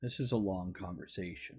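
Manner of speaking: put-on muttering. Retelling a reply to a boss who questioned this: retelling own muttering. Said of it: "I muttered something like".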